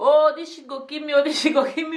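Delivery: high-pitched, crying-out shout. Recalling jumping off the bed in the labor room, retelling her own shouting. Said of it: "I jumped off the bed and I was shouting".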